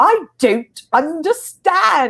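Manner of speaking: exaggerated British accent, very high, big swooping pitch. Retelling his grandfather pretending not to understand German, big British accent. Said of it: "in a big British accent".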